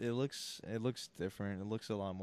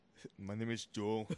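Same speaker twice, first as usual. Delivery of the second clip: thick, put-on Austrian accent. Joining the joke about an actor's accent: Schwarzenegger impression. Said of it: "he'll still have his accent".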